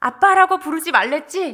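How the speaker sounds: high, loud, cold, slightly angry stern delivery. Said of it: "다시 냉정하게".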